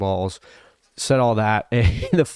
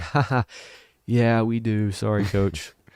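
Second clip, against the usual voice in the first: put-on nervous laughter. Retelling how reporters reacted to a coach: imitating nervous giggling. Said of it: "nervously giggles, like".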